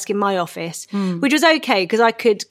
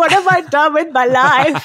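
put-on weeping tantrum, higher pitch and louder; 7 semitones higher, 5 dB louder than usual. Retelling lying on the floor weeping in a tantrum: imitating own past weeping tantrum. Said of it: "weeping, like, having a toddler tantrum".

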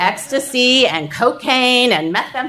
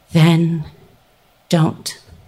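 incredibly even, unruffled, calm, very low steady voice; 7 semitones lower than usual. Retelling her reply after the speaker says they cannot do this anymore: imitating a calm, steady voice. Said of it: "in this incredibly calm, steady voice".

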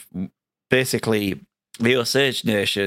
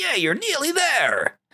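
small, very high-pitched American voice. A player imitates the game's helper voice that annoys some people: little American voice. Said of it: "this little American voice going".

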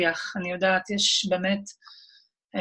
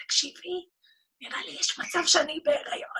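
very high, bashful, embarrassed whisper; 10 semitones higher, 3 dB quieter than usual. Retelling what she said to her gynecologist, in a retold whisper. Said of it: "אמרתי לה בלחש כזה".

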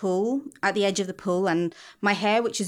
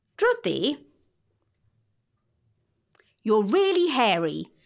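put-on loud sing-song child blurt, pitch swinging. Retelling what a ten-year-old boy said to them, imitating a child shouting loudly. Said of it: "in as loud as a voice as a 10-year-old can have".

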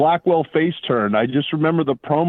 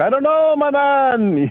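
very high, very slow drawl, "man" drawn out; 11 semitones higher than usual. Retelling an autograph meeting, answering as the heel manager: Adnan voice. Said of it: "in typical Adnan voice".

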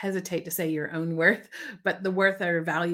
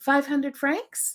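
mock question intonation, pitched much higher; 7 semitones higher than usual. Retelling how people state their price when asked, said like a question. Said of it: "They say it like a question".

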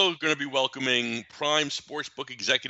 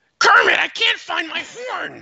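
loud, very high, stretched-out puppet voice; 5 dB louder than usual. Trying a Muppet impression that strains the voice: Gonzo voice. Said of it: "I'm trying to do Gonzo".

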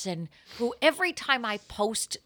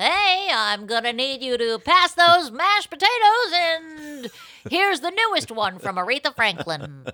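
raised, pitched-up radio DJ patter, stretched out; 6 semitones higher, 7 dB louder than usual. Imagining a Kasem family Thanksgiving dinner: Casey Kasem voice. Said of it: "Thanksgivings at the Kasem?".

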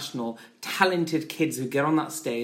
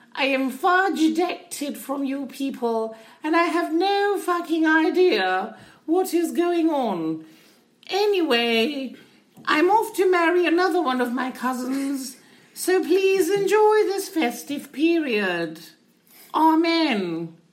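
very high-pitched, stately, formal address voice; 13 semitones higher, 4 dB louder than usual. Parodying the Queen's Christmas speech: Queen Elizabeth impression. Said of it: "That Queen speech really touched me".

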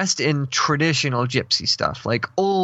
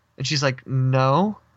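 ordinary talk

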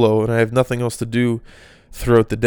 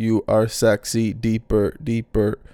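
mechanical, robot-like speech; 4 dB quieter than usual. Describing sex dolls in documentaries, the speaker mimics how they talk; robotic voice. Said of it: "they still talk like a robot".

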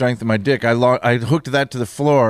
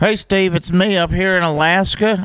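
fake American Southern accent, pitched up; 7 semitones higher than usual. Playing a caller from Alaska phoning the show: put-on southern accent. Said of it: "I don't know why I have a southern accent".

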